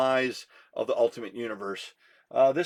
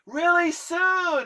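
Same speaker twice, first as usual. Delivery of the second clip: very high put-on shriek, stretched out; 3 dB louder than usual. Retelling a shouted reply from down the street: imitating someone screaming. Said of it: "he screams".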